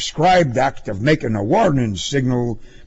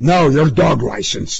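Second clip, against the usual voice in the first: angry growled retort, full of anger; 2 semitones higher, 4 dB louder than usual. A police officer questioning a man about his license gives an angry growl. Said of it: "the cop growled angrily".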